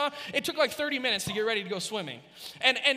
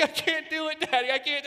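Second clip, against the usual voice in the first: acted, panicky, sobbing child voice; 3 semitones higher than usual. Describing how panicking kids cry at the pool: imitating a crying panicked kid. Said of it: "they just start to, like, cry".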